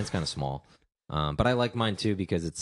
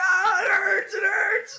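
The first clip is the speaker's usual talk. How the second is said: put-on pained scream, higher and louder; 7 dB louder than usual. Retelling a stinging shower after the pool: imitating own past screaming in pain. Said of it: "just screaming at the top of my lungs".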